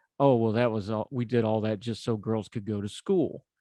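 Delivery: ordinary delivery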